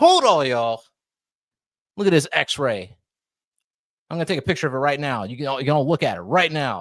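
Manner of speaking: smug, gloating, crowing boast. Acting out someone showing an X-ray to doubters: mock gloating. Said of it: "she can gloat".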